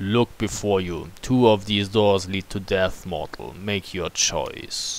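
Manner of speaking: low voice, speaking slowly. A voice from deep within the keep addresses a mortal, deep, slow voice. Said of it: "A deep voice speaks slowly".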